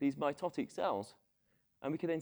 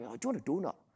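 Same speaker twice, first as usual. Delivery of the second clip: put-on Scottish accent. Imitating a colleague offering a donut: Sean Connery impression. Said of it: "it's my best Sean Connery impression".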